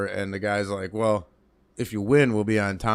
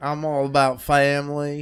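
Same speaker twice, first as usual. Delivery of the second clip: mock Louisiana accent, higher pitch; 5 semitones higher, 4 dB louder than usual. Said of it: "he's talking with a Louisiana accent".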